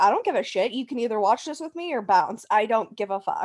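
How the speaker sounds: mock defensive, dismissive take-it-or-leave-it tone. Retelling a reply to a boyfriend who mocked the show: imitating own defensive retort. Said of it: "I was very defensive".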